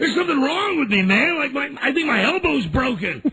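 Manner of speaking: very high, shrill, frantic, high-pitched screaming. Retelling a car accident panic: imitating own screaming. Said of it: "I'm screaming".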